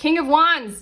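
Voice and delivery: very high, near-shouted call. Reading someone's last tarot cards, announcing the card, almost shouting. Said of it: "I keep almost like shouting".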